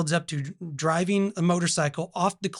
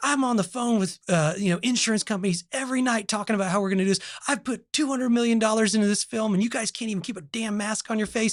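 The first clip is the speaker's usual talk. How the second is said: mock scolding tirade, heated and pitched-up; 5 semitones higher than usual. Retelling a recording of Tom Cruise yelling about his movie, imitating Tom Cruise yelling. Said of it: "he's like yelling at him".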